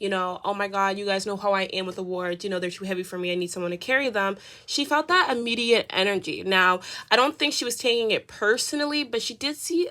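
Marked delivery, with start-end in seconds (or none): none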